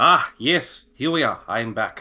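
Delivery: put-on shaky German accent, high, slow and drawn out. Getting back into a character's voice after a trick: put-on German accent. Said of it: "I had to reboot his German".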